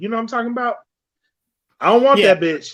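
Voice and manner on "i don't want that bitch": mocking, bitter, resentful, dismissive tone. Imitating a bitter baby daddy: imitating a bitter baby daddy. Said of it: "A bitter ass baby daddy".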